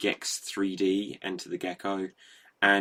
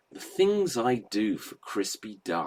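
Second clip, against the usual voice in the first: swooping, sing-song character voice, pitch swinging up and down. Quoting a favourite line of a video game gecko: Leslie Phillips voice as Gex. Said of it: "he'd go".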